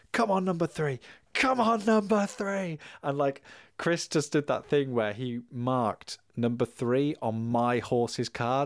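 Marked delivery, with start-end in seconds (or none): 0.1-2.8 play-acted high, excited, screaming cheering shout. Retelling a board game horse race, imitating shouting at the table. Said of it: "shouting and screaming at the table".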